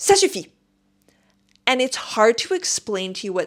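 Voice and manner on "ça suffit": play-acted, snapped, very high-pitched, snappish delivery. Retelling how a woman who cut in line snapped back: imitating someone snapping. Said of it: "And she snaps at me".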